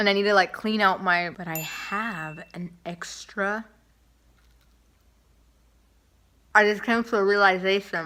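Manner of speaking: speaking with mouth partly full of food. Trying Oreos for viewers, talking with food in mouth. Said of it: "it's disrespectful to talk with my mouth full".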